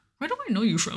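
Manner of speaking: soft, hushed half-whisper under the breath. Retelling a caped character's line from a show, imitating a half-whisper. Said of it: "he whispers".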